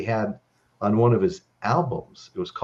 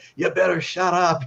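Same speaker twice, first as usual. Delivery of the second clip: play-acted, pitched-up yelling; 8 semitones higher than usual. Retelling bodyguards yelling at a musician: imitating bodyguards yelling. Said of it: "they're all yelling at [name]".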